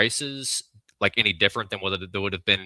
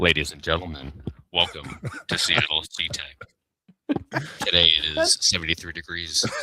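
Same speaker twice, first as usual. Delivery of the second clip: put-on pilot announcement voice, much lower; 4 semitones lower than usual. Guest told he sounds like an air traffic controller performs: airline pilot announcement voice. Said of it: "Can you do me a favor and say".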